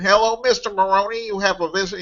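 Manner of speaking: very high, wimpy, pinched-nose nasal whine. Retelling how he announced a visitor, in a pinched-nose nasal voice. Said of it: "pinched my nose together and said".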